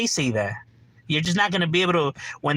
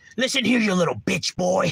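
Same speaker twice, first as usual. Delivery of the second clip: put-on yelling voice, higher pitch; 4 semitones higher than usual. Mocking how Wes Watson raises his voice: imitating Wes Watson yelling. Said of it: "Wes Watson raises his voice".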